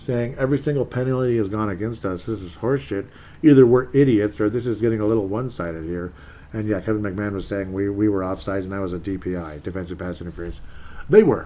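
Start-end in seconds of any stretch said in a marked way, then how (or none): none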